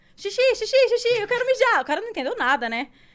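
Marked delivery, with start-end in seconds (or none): 0.2-1.8 mock, very high, loud yelling call. Retelling how they started shouting to a guy, retelling a shout. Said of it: "Aí eu comecei a gritar pro cara".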